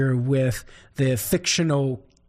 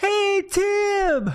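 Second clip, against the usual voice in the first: high-pitched, hollering Cajun voice. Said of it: "he hollered out".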